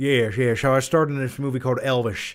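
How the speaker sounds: affected, pretentious voice. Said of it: "pretentious [name] voice".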